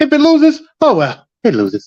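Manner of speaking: very high, swooping put-on voice. Talking about a possibly losing bet in an impression: Peter Loshak voice. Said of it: "I'm in my Peter Loshak voice".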